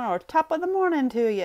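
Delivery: bad put-on Irish accent. Greeting viewers at the start of a video, in a not so great Irish accent. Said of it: "How did that sound for a not so great Irish accent".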